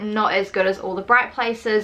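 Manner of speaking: ordinary delivery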